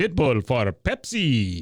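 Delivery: deliberately bad, exaggerated put-on voice with wide swooping pitch. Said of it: "that was my [name] impression".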